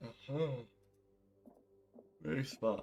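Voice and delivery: soft, words stretched out by a yawn. Nearly one a.m., answering the other speaker, yawning while speaking. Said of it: "I'm yawning there".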